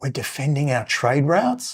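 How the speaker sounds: secretive, hushed half-whisper stage whisper under breath. Retelling a comedy skit where a character half-whispers a name: imitating a half-whisper. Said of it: "I'll whisper it and you just nod".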